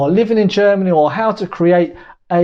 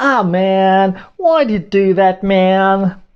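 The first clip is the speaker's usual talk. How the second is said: slow, poor fake American accent, man stretched. Comparing what Americans and Germans say, showing it in a bad American accent. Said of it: "It's not a very good American accent".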